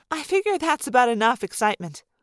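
usual speaking voice

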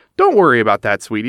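ordinary delivery, nothing marked

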